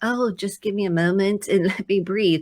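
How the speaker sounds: mock overly beautiful, calm, serene, tranquil tone. Retelling own words in a way that sounds too beautiful: imitating own calm tone. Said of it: "I'm making this sound so beautiful".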